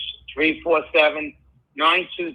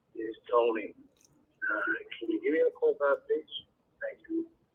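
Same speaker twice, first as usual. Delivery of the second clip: put-on gruff, low, breathy disguised voice; 7 dB quieter than usual. A caller leaves a voicemail under a different name, in a faked gruff lower voice. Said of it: "but gruffer and lower, like they're putting on another voice".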